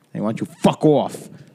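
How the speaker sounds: put-on New Jersey accent. Acting out a guy answering a question about his accent, in a Jersey accent. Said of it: "What's with the Jersey accent".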